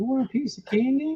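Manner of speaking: very high-pitched cartoon old man voice. Doing the old man from Family Guy: old man from Family Guy voice. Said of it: "Isaac sounds like the old man from fucking, uh, Family Guy".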